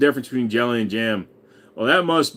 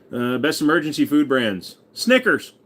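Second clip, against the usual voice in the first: ordinary talk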